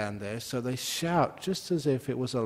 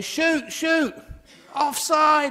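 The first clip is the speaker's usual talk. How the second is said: very high-pitched, raised shouting; 8 dB louder than usual. The speaker acts out football fans in england at a tv; imitating shouting at a tv. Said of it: "they're shouting at a TV".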